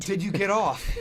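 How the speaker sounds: put-on Brooklyn accent. Repeating someone's question to the group, in a brooklyn accent. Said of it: "Did you just turn from Brooklyn?".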